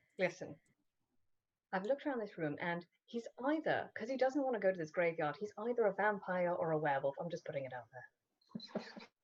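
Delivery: very quiet, barely audible half-whisper. Leaning over to another player to share a suspicion: half-whispering. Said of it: "I'm whispering it to Clint".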